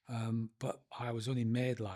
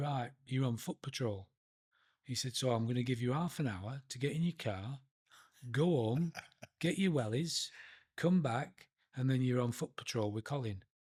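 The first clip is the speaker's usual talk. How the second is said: put-on northern Yorkshire accent. Retelling what a man told them in the snow, in a Yorkshire accent. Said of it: "in a northern accent, Yorkshire".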